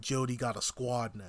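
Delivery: plain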